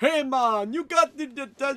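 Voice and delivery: put-on very slow, very drawn-out Jamaican accent. Playing a game, calling out to a guy on the roof in a Jamaican accent. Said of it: "I could have done Jamaican accent".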